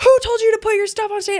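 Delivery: play-acted, very high screaming. Retelling how a stage manager came out at a show: imitating someone screaming. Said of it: "he comes out screaming".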